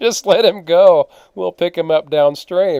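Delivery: acted laughing through words. Telling a trip story, quoting own reply to the one who asked, retelling laughing while talking. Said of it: "I just start laughing".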